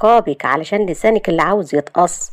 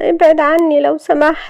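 scared, fearful, pained, hurting, pitched up; 10 semitones higher, 4 dB louder than usual. Narrator reads a woman pulled close by a man, fearful and pained. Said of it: "شهد بخوف وألم".

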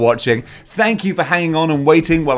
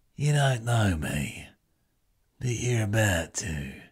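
deep, hoarse, low delivery; 4 semitones lower, 11 dB quieter than usual. Joking about a hoarse voice, doing a Jason Statham impression. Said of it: "That was a good Jason Statham".

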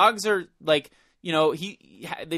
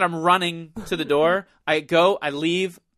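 ordinary talk

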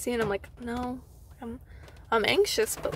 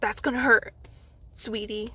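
mock condescending tone, a bit weird. Retelling what an angry woman said, imitating a condescending tone. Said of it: "she had, like, this voice... it was, like, condescending".

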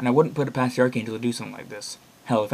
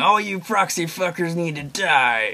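high, shrill mock yell, as if from outside; 6 semitones higher, 3 dB louder than usual. Reading a note aloud about a killer outside the window: shouting. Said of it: "we heard him shouting".

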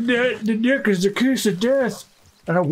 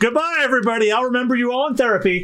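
cartoon character voice. Joking about a friend installing game mods: Plankton voice. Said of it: "my immediate thought went to, uh, Plankton from SpongeBob".

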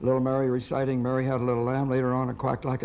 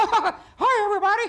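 jumping up into very high, loud, projected falsetto; 6 dB louder than usual. Asked how hard Mickey is to do, showing the falsetto Mickey Mouse voice. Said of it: "It's falsetto".

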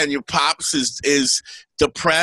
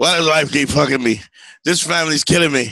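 plain

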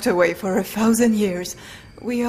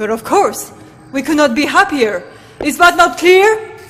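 very loud, rising, royal proclaiming yell; 6 semitones higher, 9 dB louder than usual. Royal character answering a question about being happier, yelling. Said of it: "you kinda sound like you're yelling at me".

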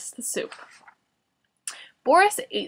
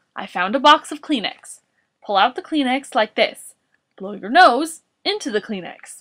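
ordinary delivery

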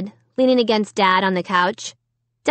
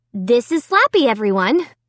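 usual speaking voice

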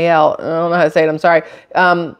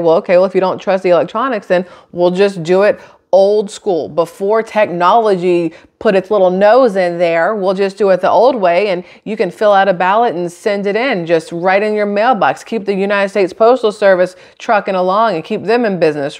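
ordinary talk

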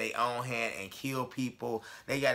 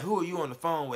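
mock hostile cop voice, higher; 6 semitones higher than usual. Retelling what a cop asked while on the phone with dad, retelling a cop's hostile tone. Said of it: "it was kind of in that tone".

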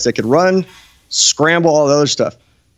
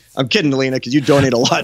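normal talking voice

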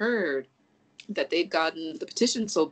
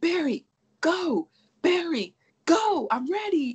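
very high, slow, desperate pleading cry. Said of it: "When he was like".

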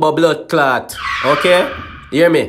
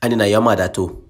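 put-on Jamaican accent, much lower pitched; 8 semitones lower, 4 dB quieter than usual. Asking Siri a question, then voicing its answer in a Jamaican accent. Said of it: "Why sound so Jamaican".

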